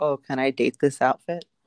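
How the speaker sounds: ordinary talk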